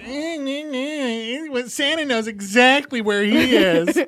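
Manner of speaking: mock, high, petty nitpicking whine. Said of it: "she'd be so petty ... she'd be like".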